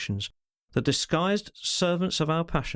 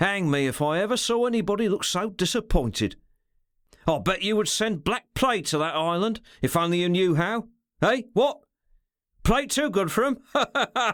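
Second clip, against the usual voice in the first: rasping, pitched-up, derisive sneer ending in harsh laughter; 5 semitones higher than usual. A man bends over a silent, disappointed listener to mock him: rasping, derisive mocking laughter. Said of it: "with his voluptuously gleaming eyes and the coy expression, looked so much like a cat that [name] would have felt all the alarm of a mouse if other feelings had not / he said, / and I am an Englishman".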